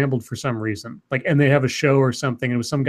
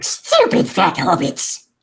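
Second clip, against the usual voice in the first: high, creepy cave-creature style voice; 5 semitones higher, 4 dB louder than usual. Teased about sounding like Gollum, the speaker does a Gollum voice. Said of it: "Why did Scribe sound like Gollum?".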